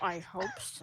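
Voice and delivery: very quiet, hushed, barely audible under-breath mutter. As Mira, reacting to a companion's plan: Mira muttering under her breath. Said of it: "Mira's just like under her breath".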